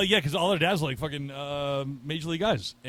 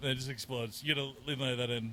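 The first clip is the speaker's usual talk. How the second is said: ordinary delivery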